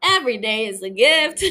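attempted Southern accent, loud. After admitting a failed try, the speaker retries with a Southern accent attempt. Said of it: "Hold on, let me try again".

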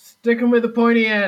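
put-on yelling grand voice. Voicing Athena as she takes her turn to yell: Athena yelling. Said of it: "As Athena now has her turn to yell".

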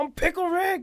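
very high-pitched, loud cartoon character squeak. Celebrating episode three with a co-host, doing a Pickle Rick impression. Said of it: "That's a killer impersonation".

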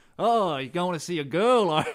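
slow, drawn-out Texan American drawl. Retelling a stranger at the pub chiming in to a friend, put-on Texan accent. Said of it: "He wasn't that Texan. That's the only American accent I can do".

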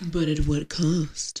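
very slow, theatrical, drawn-out dramatic delivery. Responding to a movie plot summary, jokingly: dramatic. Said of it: "I was trying to be dramatic".

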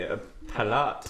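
palate said softly in a mock French accent. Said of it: "Yeah, en français".

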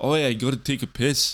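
put-on British-sounding accent, possibly Scottish. Mocking how British people say they need the toilet: imitating a British accent. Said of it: "I don't know if it's Scottish".

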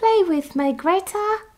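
put-on British accent, very high-pitched and slow. Repeating the ghost boy's line from the movie: British accent. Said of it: "I'm not gonna do a British accent anymore".

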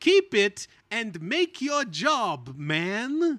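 put-on very thick Italian accent, loud, very slow. Recapping a scene, quoting one person telling another, in a very thick italian accent. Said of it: "in a very thick Italian accent".

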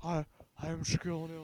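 very quiet, soft, barely a murmur. Doing an impression for friends: Shaquille O'Neal impression. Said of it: "That's my Shaquille O'Neal impression".

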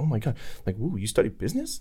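put-on interested tone. Acting out how to perform at a first meeting: faking interest. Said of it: "listening to someone fake with fake interest".

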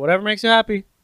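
mock hollering. Recounting a coming-out moment, imitating the dad yelling his response. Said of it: "And then my dad yelled".

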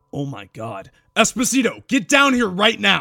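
high, rising, fearful call. Calling a partner down after finding bodies: fear gripping his throat. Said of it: "with fear gripping his throat".

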